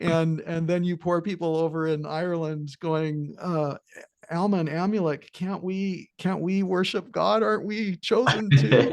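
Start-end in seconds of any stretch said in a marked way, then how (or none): 4.3-8.9 sarcastic, pitched-up put-on voice. Imitating poor people in Ireland pleading: sarcastic mocking imitation. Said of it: "I'm trying to be a little bit sarcastic".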